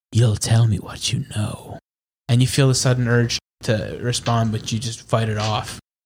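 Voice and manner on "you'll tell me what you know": seductive, sultry voice. Storyteller voices a figure speaking through a slit, in a sultry voice. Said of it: "you hear in a sultry voice".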